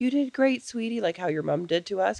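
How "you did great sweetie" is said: gushing, overly friendly, fluffy, pitched-up sugary tone. Asking for tough love instead of a mom's gentle praise: mock overly friendly praise. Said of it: "fluffy, overly friendly".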